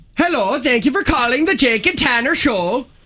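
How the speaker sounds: squeaky, very high-pitched Swedish accent. Asked by a co-host to do Swedish, answering a call, Swedish accent. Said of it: "Do Swedish".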